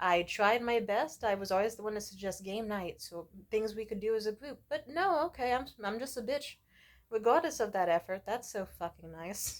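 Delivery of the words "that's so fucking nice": sarcastic tone, lower and quieter. Venting about unappreciated efforts toward family: sarcastic. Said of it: "she said sarcastically".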